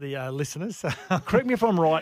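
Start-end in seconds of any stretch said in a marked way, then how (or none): 1.3-2.0 loud, fast words laughed out.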